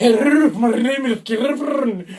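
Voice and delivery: very slow bad Scottish accent with rolled r. Speaker shows the others the Scottish voice they once did: put-on Scottish accent. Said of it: "my Scottish voice was like".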